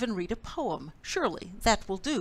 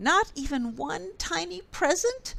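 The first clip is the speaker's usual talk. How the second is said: high, small squeaky voice; 7 semitones higher than usual. Reading a story aloud, voicing Mouse speaking to Bear: squeaky Mouse voice. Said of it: "squeaked Mouse".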